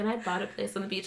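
mock offhand casual manner. Retelling a celebrity mentioning a beach house: imitating someone casually nonchalant. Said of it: "It was just, like, yeah".

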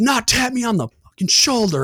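mock screaming rant, very high, screamed outburst. Retelling a petty officer's reaction to a shoulder tap: imitating someone screaming. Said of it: "just starts screaming at me".

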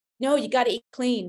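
put-on North American accent with Canadian flavor. Addressing an audience, quoting what some tell their clients, in a put-on American accent. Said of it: "in the American accent, Canadian accent".

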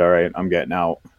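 ordinary delivery

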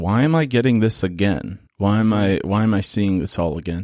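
ordinary talk

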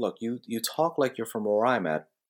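ordinary talk

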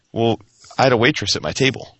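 mock-calm, put-on calm tone. Telling a convention story, speaker quotes an experienced con-goer's reply: retelling a calm reply. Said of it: "he's real calm and says".

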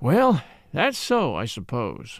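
with a sigh. Van Alden replies to Ruth at the train, with a sigh. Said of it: "with a sigh".

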